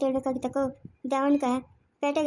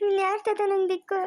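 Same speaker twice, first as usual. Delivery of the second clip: high, tearful pleading voice. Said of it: "ಅಳ್ಬಾರ್ದಮ್ಮ".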